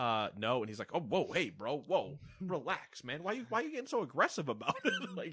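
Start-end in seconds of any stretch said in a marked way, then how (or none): 0.9-5.3 put-on defensive voice, higher pitch. Imagining Joseph Fares's reply when somebody tells him no: mock-defensive Joseph Fares impression. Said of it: "immediately pivots hard to the clear defendant".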